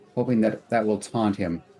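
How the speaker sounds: ordinary delivery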